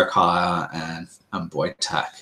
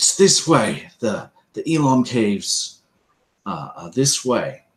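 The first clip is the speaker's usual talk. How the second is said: very commanding, authoritative voice; 4 semitones higher than usual. A storyteller voices a hidden figure the listeners overhear, in a very commanding voice. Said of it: "you hear a very commanding voice".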